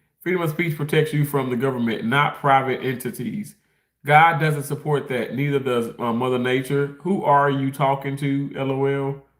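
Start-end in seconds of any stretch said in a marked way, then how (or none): none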